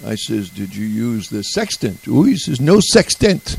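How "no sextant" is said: put-on French accent, much higher pitch. Retelling a chat with a man who came from sea, imitating a French accent. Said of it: "he spoke back to me with a French accent".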